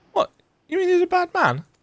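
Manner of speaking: put-on very high, childlike little girl voice. Voicing several characters, the girl asks about the trickster, in a little girl voice. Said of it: "It's my little girl voice".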